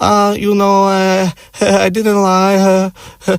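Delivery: acted uncomfortable, halting, very high hesitant voice. Retelling a woman's hesitant phone reply: imitating an uncomfortable, awkward reply. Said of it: "she's audibly uncomfortable".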